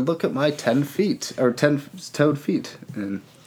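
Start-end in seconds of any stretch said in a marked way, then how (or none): none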